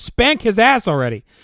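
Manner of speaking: exasperated, fed-up screaming. Complaining about a show, the speaker reenacts yelling at the screen: retelling a scream. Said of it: "looked at the screen and screamed".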